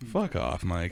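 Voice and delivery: broadcast announcer style, like a sports commentator. Cueing the show's outro, the speaker signs off in a commentator voice. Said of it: "My best commentator voice".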